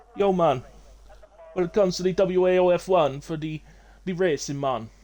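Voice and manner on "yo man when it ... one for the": bad put-on Jamaican accent, pitched up. Joking about speaking a different accent this week: put-on Jamaican accent. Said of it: "did I just do a Jamaican accent?".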